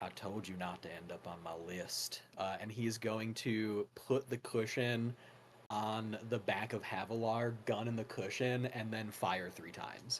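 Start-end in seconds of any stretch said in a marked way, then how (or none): 0.0-2.2 quiet, hushed half-whisper under the breath. Voicing a character who walks up behind a target: half-whispering to himself. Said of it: "whispers to himself".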